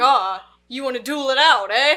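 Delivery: very loud goading tone. Retelling a movie scene where a character challenges someone: imitating a character challenging to a duel. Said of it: "He's like".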